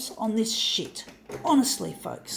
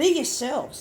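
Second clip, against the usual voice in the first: loud, raised voice; 4 semitones higher than usual. Urging people to be themselves, loud. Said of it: "I say in a loud tone of voice".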